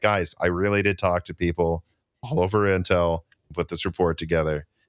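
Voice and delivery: ordinary talk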